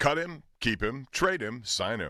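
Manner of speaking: game show host announcer voice. Asked to say the segment title like at the start of a game show: game show host voice. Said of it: "however you would say it at the beginning of a game show".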